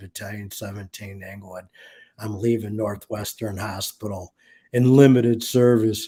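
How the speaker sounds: very low, flat monotone voice. Retelling his call to the fire alarm office on leaving the hospital, very low monotone voice. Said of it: "in a very low monotone voice".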